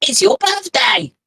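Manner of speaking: very loud, high, shrill goblin shout. The game master voices a small goblin bringing the bill, very loud goblin exclamation. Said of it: "Turns to you and very loudly".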